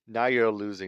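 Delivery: ordinary talk, nothing marked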